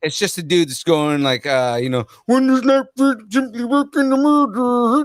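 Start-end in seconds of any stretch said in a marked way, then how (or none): 2.3-5.1 put-on mock Swedish accent. Joking about a rando in Sweden owning Lord of the Rings: Swedish Chef voice. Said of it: "I'm going with Swedish Chef".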